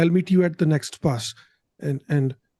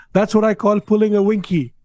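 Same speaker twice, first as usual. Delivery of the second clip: triumphant, victorious yell; 4 semitones higher, 4 dB louder than usual. Telling a story, the narrator gives a character's yell from atop a clothes pile: yelling. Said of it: "he just yells".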